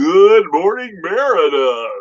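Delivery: on-air disc jockey delivery. Reading a chat member's greeting to Meredith aloud, in radio DJ voice. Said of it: "says in D J voice".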